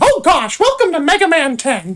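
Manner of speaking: pitch going way up high and swooping around. Joking about making noises, doing a Mickey Mouse impression. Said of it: "a Mickey Mouse impression?".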